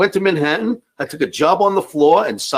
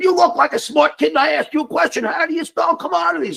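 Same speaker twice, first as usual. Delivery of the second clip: mock irritated, aggravated tone, pitched up; 13 semitones higher than usual. Retelling a broker's repeated question on the trading floor: imitating an aggravated broker. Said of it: "This time he's a little aggravated".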